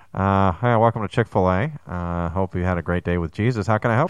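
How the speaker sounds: muffled squawk-box voice. Asked to talk like a drive-thru box, taking an order in a muffled drive-thru speaker voice. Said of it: "talk to me like you're in the squawk box".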